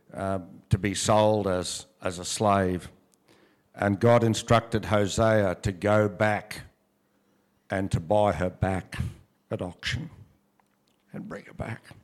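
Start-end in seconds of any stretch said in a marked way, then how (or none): 3.7-11.8 faltering mid-phrase, halting, overcome, emotional breaks. Speaker retelling the story of hosea, getting emotional. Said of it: "Sorry, I'm a bit emotional".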